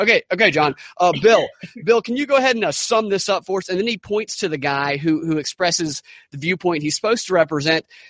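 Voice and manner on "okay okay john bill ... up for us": play-acted condescending, patronizing tone, pitched up. Imitating a TV host handing off to another guest: condescending Don Lemon impression. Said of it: "He's really condescending".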